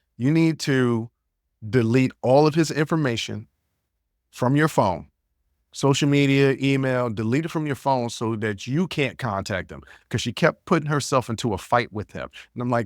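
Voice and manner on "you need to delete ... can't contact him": ordinary delivery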